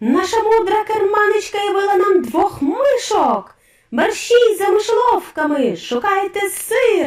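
very high, delighted, gleeful yelling. Witches see two mice around their leader's dress, yelling delightedly. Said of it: "захоплено репетували відьми".

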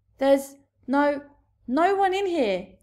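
stumbling, nervous stammer. A nervous giant answers a much bigger giant who threatens him; nervous stammer. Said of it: "he stammered".

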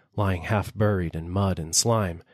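plain reading voice

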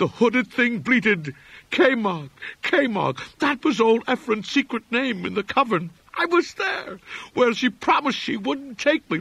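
half-incoherent frenzied raving torrent, very high-pitched. A man who knows the narrator at once pours words out at him; frenzied, half-incoherent torrent. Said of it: "vacillating between frenzy and apathy. He knew me at once and began pouring out a meaningless, half-incoherent torrent of words in my direction".

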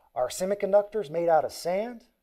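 Southern US drawl with stretched vowels. Retelling the father's question on a phone call, imitating dad's southern drawl. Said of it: "he asked me in his southern drawl".

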